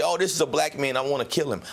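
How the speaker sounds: ordinary talk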